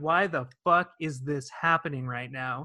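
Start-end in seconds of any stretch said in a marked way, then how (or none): none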